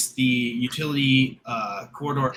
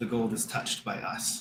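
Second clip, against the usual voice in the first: whispering voice, eerie; 3 semitones lower, 9 dB quieter than usual. Voicing a whisper the player hears in the background: whispering voice. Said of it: "behind the main part of the whisper".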